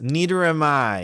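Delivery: snarled words, bared like a snarl. A narrator reading a story aloud gives a character's reply, snarling. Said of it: "he snarls".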